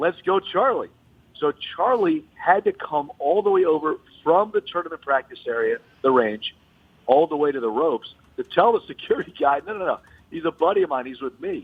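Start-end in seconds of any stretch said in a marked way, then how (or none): 0.0-0.9 high, play-acted cheering yell. Retelling a fan's run-in with security, speaker quotes him yelling. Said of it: "I was yelling".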